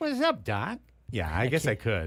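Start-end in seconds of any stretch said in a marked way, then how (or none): 0.0-0.8 high, pitched-up cartoon rabbit voice. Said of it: "Can you do that voice?".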